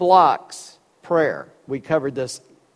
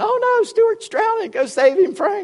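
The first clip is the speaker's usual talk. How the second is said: mock screaming cry, pitched way up. Retelling a mother's cry while her son seemed to drown: imitating mom screaming. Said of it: "My mom was screaming".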